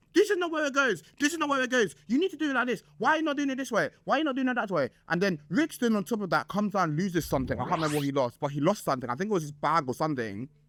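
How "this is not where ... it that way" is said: put-on high-pitched, drunken yelling. Telling the story, the speaker re-enacts what they shouted at the guys, retelling own shouting. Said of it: "I'm like shouting".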